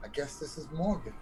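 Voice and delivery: breathy whisper on the breath. A player walking behind Theo, casing the place, whispering on breath. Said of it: "I'm like whispering on breath".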